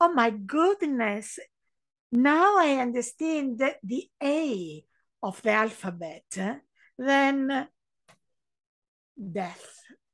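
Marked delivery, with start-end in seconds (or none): none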